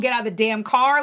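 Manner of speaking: normal talking voice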